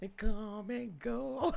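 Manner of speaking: laughing through the sung words.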